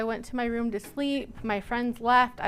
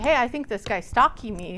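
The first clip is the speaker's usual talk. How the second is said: ordinary delivery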